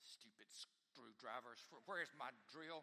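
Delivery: irritated grumbling through gritted teeth. Retelling grumbling through a long screwdriver job: imitating muttering under breath. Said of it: "I was saying under my breath".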